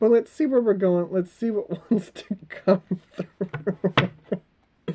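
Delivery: laughing while talking, giggling through words. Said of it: "I'm just very tickled by this".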